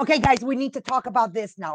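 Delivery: put-on angry start. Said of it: "do you start in a way that you seem angry already".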